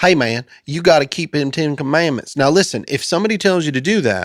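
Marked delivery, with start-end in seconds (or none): 0.0-2.4 put-on, laid-on southern country twang accent. Imitating someone urging others to keep the commandments: put-on southern hick voice. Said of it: "this is gonna sound Southern and hick".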